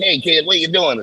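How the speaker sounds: put-on old Hollywood movie voice. Retelling being approached after a flip off the wall: 1940s Hollywood movie voice. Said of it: "a forties Hollywood movie".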